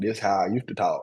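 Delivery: strong country Southern accent. Showing how they used to talk: strong Southern accent. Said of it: "a real strong, like, Southern accent".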